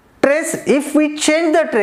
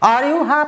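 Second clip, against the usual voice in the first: heavy emphasis on the word are. Asking a question that needs a yes-or-no answer: stress on are. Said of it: "When the trace is given on are".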